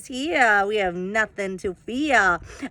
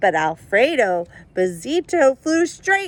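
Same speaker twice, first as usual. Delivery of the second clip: plain reading voice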